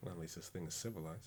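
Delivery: very quiet mutter under the breath. Voicing a character reacting to the Rat King, under breath: muttered under breath. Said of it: "Under my breath".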